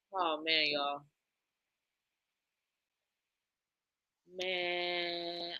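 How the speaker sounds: choked-up, tearful crying, soft and very drawn out. Talking to listeners while in tears, crying. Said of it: "I am over here in tears".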